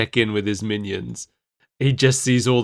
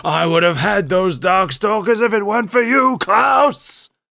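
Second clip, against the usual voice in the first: high, rising cartoon-villain yell; 8 semitones higher than usual. Acting out Pyron yelling at Klaus, speaker imitates Pyron yelling. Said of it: "Pyron's yelling at them".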